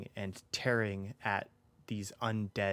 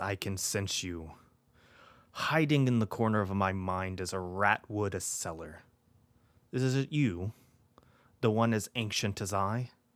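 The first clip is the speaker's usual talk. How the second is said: grave, severe, stern voice, raised; 5 dB louder than usual. A narrator voicing a presence speaking inside the listener's mind, in a stern, serious voice. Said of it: "this very um, stern and serious voice inside your mind".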